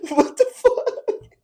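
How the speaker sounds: laughing while talking. Reacting to a product pitch from another speaker, laughing while talking. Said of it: "why are you laughing?".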